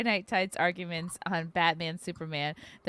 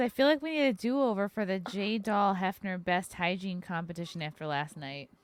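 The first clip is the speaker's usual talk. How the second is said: usual speaking voice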